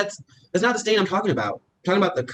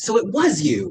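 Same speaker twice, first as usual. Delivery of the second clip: loud, raised exclamation; 3 semitones higher, 4 dB louder than usual. On a phone call about a returned hat: loud exclaiming. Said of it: "not so loud".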